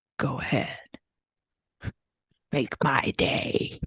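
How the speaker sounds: slow, unhurried whispered delivery. Asked for a movie quote the way the actor says it: Clint Eastwood voice. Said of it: "the way you think he says it".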